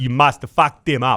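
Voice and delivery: put-on South African accent. Asked to say an alarm line in a South African accent, South African accent. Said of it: "with your best South African accent".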